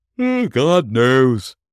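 loud, high-pitched words spoken mid-yawn. Among gossiping gentlemen, the first one answers a question, yawning. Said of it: "with a yawn".

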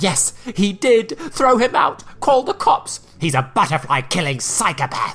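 high, gleeful, almost joyful screaming. Narrator voicing Karen's line about Jake, screaming almost joyfully. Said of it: "Karen screamed, almost joyfully".

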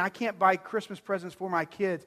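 plain

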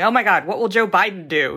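plain

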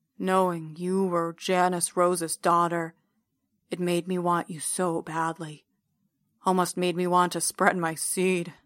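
voice drops, serious tone. Narrator reads a man speaking to janice rose's daughter, voice dropping into serious tone. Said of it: "his voice drops into what he must think is a very serious tone".

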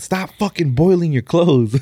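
high-pitched, acted-out yelled rant. Retelling a funny TikTok where a man yells at the camera, imitating a yell. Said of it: "He was yelling at the camera like".

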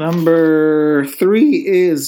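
voice breaking and cracking mid-phrase, like puberty. Counting down favorite movies, announcing the next pick, voice cracking. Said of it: "my voice just cracked right there".

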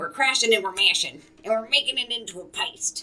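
loud, high-pitched creature-like voice. Describing mashing mung beans into a paste, Gollum voice. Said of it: "Gollum vibes".

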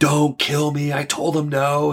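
put-on hysterical screaming and crying, high, frantic. Retelling how a wife acted insane to save herself: imitating someone screaming and crying. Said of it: "She starts screaming, crying".

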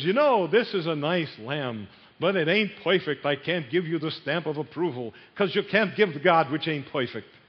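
put-on Yiddish-inflected accent.

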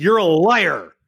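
loud, yelled screaming outburst. Retelling how a board member screamed at the presenter: retelling a scream. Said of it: "he screamed at me and he's like".

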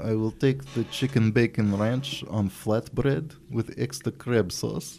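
bad fake put-on Russian accent. Ordering at Subway as a joke, in a bad Russian accent. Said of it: "in a bad Russian accent".

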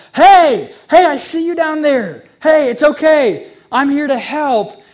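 very loud, high scream called downward. Asking listeners to imagine someone atop the mountain calling down, screaming down from above. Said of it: "someone on top of the mountain screaming down to you".

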